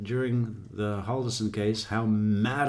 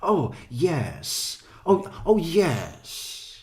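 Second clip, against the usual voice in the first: mocking affected formal speech, higher; 6 semitones higher than usual. Imitating a woman who tries to sound formal: imitating a put-on well-spoken voice. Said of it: "she thinks she needs to talk, like, almost, uh, you know, well-spoken".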